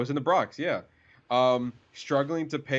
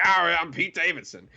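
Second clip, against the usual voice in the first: easy swaggering voice, a bit higher pitched; 5 semitones higher than usual. Recalling someone with that swagger and voice, in a Pete Davidson voice. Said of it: "that swagger that he had and the voice".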